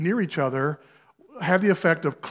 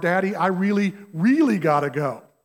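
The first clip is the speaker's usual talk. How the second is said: put-on slow, drawn-out little child's voice. Retelling the child's second, more urgent plea from the back seat: imitating a child in the back seat. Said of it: "this voice coming over the backseat".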